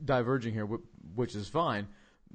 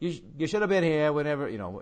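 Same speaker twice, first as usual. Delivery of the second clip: put-on New England accent, higher; 4 semitones higher, 5 dB louder than usual. Retelling what a man said when asked about the place, New England accent. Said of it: "in that New England accent".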